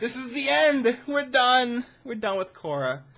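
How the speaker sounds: emotional, moved voice lifted very high. Wrapping up a video on Korra's ending, the speaker is getting emotional. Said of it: "I'm getting emotional now".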